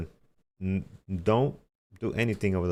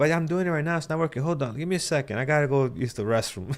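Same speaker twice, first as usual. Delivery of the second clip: put-on elderly voice, higher; 7 semitones higher than usual. Retelling stalling a phone scammer, acting like an older person. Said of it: "I act like an older person".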